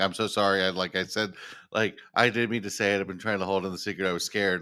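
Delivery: normal talking voice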